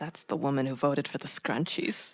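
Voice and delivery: very low, under-the-breath muttered aside. Retelling what some women said while talking: imitating muttering under breath. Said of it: "under the breath, they're like".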